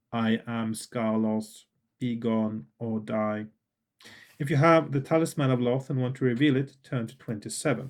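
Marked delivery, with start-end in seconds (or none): 0.1-3.4 flat, dull monotone, very slow and drawn out. Reading a gamebook, the narrator voices a figure addressing the reader: Skarlos's flat, dull voice. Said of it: "He addresses you in a flat, dull voice".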